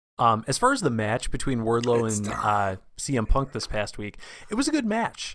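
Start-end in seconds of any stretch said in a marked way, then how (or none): 4.5-5.4 strained, raised high pitch, holding something back. Giving a verdict on the Wardlow and CM Punk match: high-pitched, holding something back. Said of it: "I say that kind of with a high-pitched voice, like I'm holding something back".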